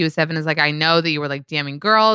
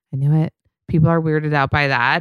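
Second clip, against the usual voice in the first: put-on whisper. Retelling what someone whispered to herself after he left: imitating a whisper. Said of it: "whispers to herself when he leaves".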